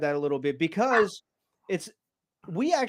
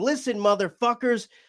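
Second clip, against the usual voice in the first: play-acted, high-pitched hollering yell; 5 semitones higher, 3 dB louder than usual. Telling the listener how she yelled at them, the speaker imitates someone yelling. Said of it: "just yelling at us like".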